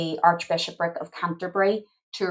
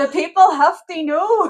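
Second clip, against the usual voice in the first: very high, very loud, shrill, booming Scottish accent; 12 semitones higher, 9 dB louder than usual. Speaker breaks from a history lesson to do a Still Game bit: Still Game-style Scottish accent. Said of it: "My Scottish accent".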